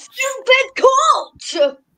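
put-on, very high, loud Scottish accent. Acting out a quoted line, in the speaker's best attempt at a scottish accent. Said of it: "That's my best Scottish accent".

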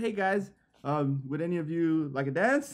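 put-on stiff, polite tone. Retelling a stripper's awkward approach: imitating a stiff, polite ask. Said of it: "she was mad stiff".

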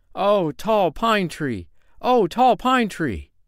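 very high, gleeful, drawn-out joyful cry. A little man, freed, calls out to a tall pine tree, crying out in joy. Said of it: "he cried in joy".

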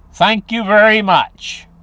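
mildly mocking, slow, high, drawn-out sarcasm. Ending a complaint about a new economics: sarcastic thank you. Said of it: "I'm being kinda sarcastic there with that thank you".

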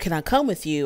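ordinary delivery

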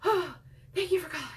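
panting, breathless, rushed, high-pitched voice. Showing how not to answer a work phone call, out of breath. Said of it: "Out of breath".

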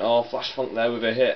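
ordinary talk

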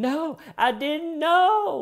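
very high, slow, whiny pleading voice.

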